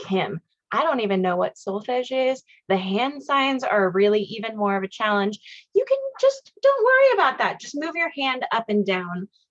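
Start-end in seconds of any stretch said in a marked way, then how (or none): none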